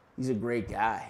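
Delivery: hushed, half-whispered, under the breath. Retelling what someone half-whispered during an argument: imitating someone half-whispering under breath. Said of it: "under his breath, he whis-, whispers".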